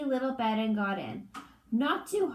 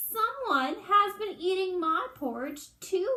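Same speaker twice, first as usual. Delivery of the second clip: wee, little, small, high voice; 8 semitones higher than usual. Reading the three bears story, Baby Bear finds his empty bowl, Baby Bear's wee little voice. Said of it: "he said in his wee little voice".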